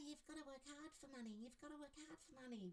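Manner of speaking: silly, funny, high, soft cartoon voice. Showing how to change an inner voice about money, in a funny cartoon voice. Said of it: "change it to some sort of funny cartoon voice".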